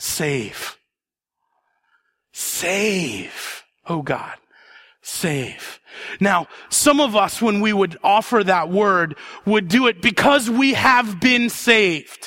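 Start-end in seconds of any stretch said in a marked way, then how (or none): 0.0-5.8 very slow, soft, drawn-out proclaiming tone. Speaker shows how the early church said the word: declarative voice. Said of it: "In a declarative voice".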